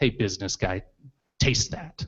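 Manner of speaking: play-acted soft, faintly scornful, lightly contemptuous tone. Acting out a chef handing over a burger: imitating a chef's slight contempt. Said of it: "with a little bit of contempt in their voice".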